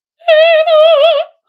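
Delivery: piercing very high, very loud call, "Eva" drawn out. Demonstrating what the vocal folds do, a higher-pitched call.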